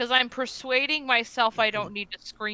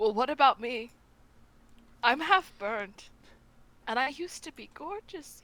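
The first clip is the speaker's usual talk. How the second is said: voice welling up with tears. Voicing a half-burned character who is asked for health: tearing up. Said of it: "He tears up".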